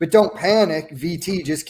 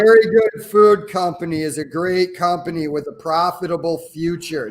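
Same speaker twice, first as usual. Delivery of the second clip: ordinary delivery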